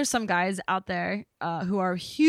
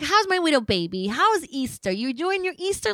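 put-on doting baby talk, as to a toddler; 8 semitones higher than usual. Recounting his mother calling on Easter and talking to her grown son, imitating baby talk. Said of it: "she talked to him like he was two".

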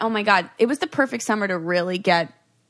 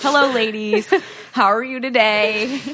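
put-on creepy man's voice; 3 semitones higher, 4 dB louder than usual. Recalling a man who always greeted them, imitating a creepy man. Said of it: "so creepy".

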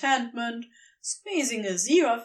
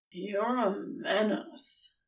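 sleepy, breathy, hushed grumble with creaking voice; 3 semitones lower, 6 dB quieter than usual. Crowley, eyes mostly closed, grumbles at Aziraphale; drowsy grumble. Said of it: "he grumbled, voice creaking with drowsiness".

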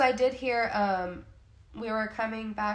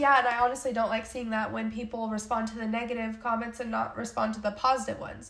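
normal talking voice

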